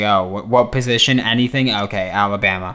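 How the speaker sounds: usual speaking voice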